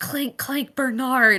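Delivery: mumbled under breath. Playing a character mumbling about an owlbear, mumbled under their breath. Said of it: "mumbles, ... under their breath".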